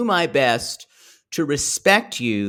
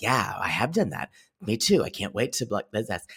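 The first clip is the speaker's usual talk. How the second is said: put-on vocal fry voice, lower and quieter; 5 semitones lower, 7 dB quieter than usual. Retelling what a cast member said at a meeting: Ashley's vocal fry. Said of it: "with her little vocal fry".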